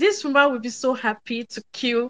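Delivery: ordinary talk, nothing marked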